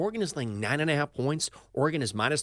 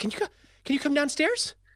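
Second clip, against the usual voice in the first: very high, breathless, rushed, out of breath; 13 semitones higher than usual. Retelling a partner's phone call at work, imitating breathless high-pitched voice. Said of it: "she's out of breath, voice up an octave".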